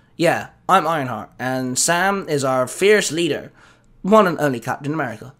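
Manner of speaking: ordinary delivery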